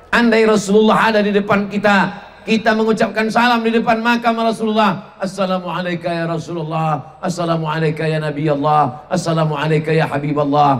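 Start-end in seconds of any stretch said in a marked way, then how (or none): 5.1-10.8 soft, gentle, gently spoken. Giving the salam before the Prophet's grave, in a gentle voice: soft gentle voice. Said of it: "dengan suara yang lembut".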